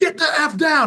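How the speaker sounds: put-on stern full-throated yell, very high and loud. Recounting yelling at your ten-year-old, retelling a top-of-voice yell. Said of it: "the top of my voice yelling at her".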